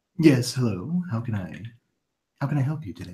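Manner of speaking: low, soft, polite gentleman character voice. Voicing a gentleman in a silk robe greeting a traveler: gentleman bookseller voice. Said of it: "He says".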